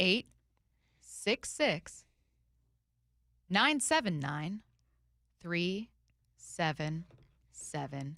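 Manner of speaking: slow, deliberate digits broken into halting pieces. Reading out a number slowly because people are calling, saying it slower. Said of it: "I'm saying it slower because people are calling".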